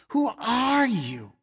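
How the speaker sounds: spoken with a hiss. Reading a story, a character confronting the narrator at the door, hissing. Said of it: "He hissed".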